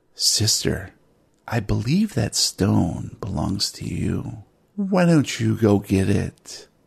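close, leaning-in, secretive half-whisper. Game master voices a character leaning in to a player's ear, half-whispering. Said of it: "leans in to Pippa behind you and whispers in your ear".

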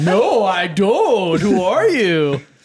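very sarcastic, slow, loud, drawn-out, laid on thick. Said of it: "I say it sarcastically as fuck".

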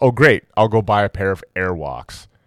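normal talking voice

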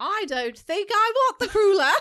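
fake British accent, shrill, high and loud. Doing the accent someone teases them about: put-on British accent. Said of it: "my stupid British accent".

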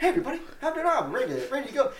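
mock very high, loud, bouncy, upbeat cheery voice. Retelling how a colleague arrived on set: imitating a cheery greeting. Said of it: "he's just in such a cheery mood".

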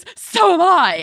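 loud, high-pitched, barked, sharp retort-like delivery. Retelling a woman's reveal line: imitating a barked line. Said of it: "lets out a bark and goes".

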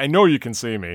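normal talking voice

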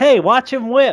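shrill, very high-pitched yell in character voice. Voicing a character calling out to the others: yelling in character. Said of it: "one shoe yells".

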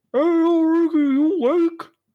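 muffled, far-off high yell. Calling up from the ground floor to a player on the third, Minami's muffled yell. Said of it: "he is yelling at you from from the ground floor".

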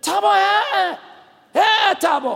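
mock scream, high and dragged out very slowly. Retelling a young man in a hospital ward waking at night: imitating someone screaming. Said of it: "Screaming every evening".

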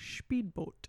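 breathy, whispered movie-star voice, breathed out. Performing an impression again after being asked for one more time: Sean Connery impression. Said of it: "my impersonation of him".

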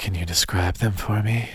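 winded, seductive voice. Asking the other speaker to describe them, in a winded sexy voice. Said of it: "I sound winded every time I try to be sexy".

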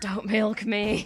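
whispering. Voicing a character dropping unconscious to the ground: whispering. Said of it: "he just whispers".

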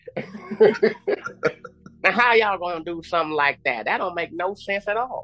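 put-on convincing Southern American accent. Showing how a southern voice would react to news he was released: good southern accent. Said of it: "the good Southern accent would have came in".

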